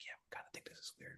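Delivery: hushed, very quiet, confiding whisper, barely voiced. Quoting what writers and agents say at events, retelling a whisper. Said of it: "they would like whisper like".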